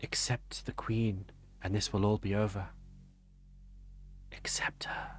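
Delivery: quiet whispered voice, as if close to the ear. As a player wakes from unconsciousness, a voice speaks in their ear: whispering voice. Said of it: "you hear a voice whispering in your ear".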